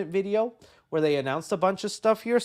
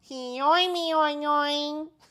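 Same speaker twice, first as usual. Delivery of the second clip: every "oing" stretched out slowly; 10 semitones higher than usual. Listing favorite SpongeBob episodes, doing a Doodle Bob impression. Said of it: "That's my Doodle Bob impression".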